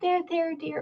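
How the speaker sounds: put-on sweet grandma voice. Acting out the sweet granny voice in one's head: dear, sweet granny voice. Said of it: "And the granny says".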